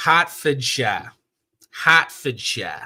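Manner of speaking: Boston-sounding pronunciation. Host greeting mod admins, reading out a place name, Boston-sounding pronunciation. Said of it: "that sounded too Boston".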